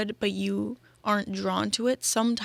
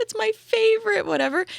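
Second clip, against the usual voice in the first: almost crying, very high and loud; 13 semitones higher, 6 dB louder than usual. Retelling a woman's reaction when he brings her McDonald's, imitating someone almost crying. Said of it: "she starts like almost crying".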